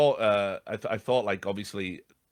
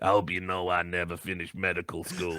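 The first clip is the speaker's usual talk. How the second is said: put-on gravelly voice, lower and quieter; 4 semitones lower, 4 dB quieter than usual. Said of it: "in that gravelly voice".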